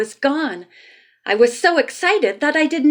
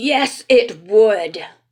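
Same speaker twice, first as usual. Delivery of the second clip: severe, stern voice; 4 semitones lower than usual. Narrating a story, an unseen man answers Mister Moto: stern voice. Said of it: "came the stern voice of an unseen man".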